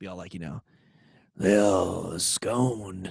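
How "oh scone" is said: put-on hard-drinking cigar smoker voice, drawn-out "oh". Asked to share the one voice they're good at, doing the cigar-smoking whiskey-drinking dude voice. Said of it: "the dude that smokes cigars and drinks too much whiskey voice".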